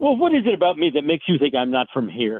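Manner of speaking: mildly exasperated, swooping delivery, acted out. Speaker retells picking his comedic moment to reply, retelling an exasperated remark. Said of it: "with a bit of exasperation in my voice".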